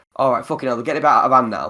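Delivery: ordinary delivery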